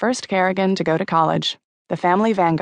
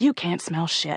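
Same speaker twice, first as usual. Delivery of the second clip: low hiss under the breath; 5 dB quieter than usual. Reading a story aloud, he snaps back at her accusation: hissed. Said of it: "he hissed".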